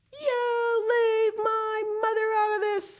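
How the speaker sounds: very high, ringing, bellowing roar of an outburst. Narrator reads Patrick Edward answering the biggest boy, roaring loudly. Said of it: "Patrick Edward roared so loudly the whole mountain rang".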